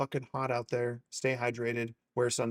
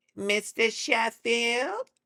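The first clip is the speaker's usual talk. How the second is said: very high, squeezed voice, a little gravelly; 10 semitones higher, 4 dB louder than usual. Trying again after a first attempt at the voice, do a gravelly Fran Drescher impression. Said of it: "It's a little more gravelly".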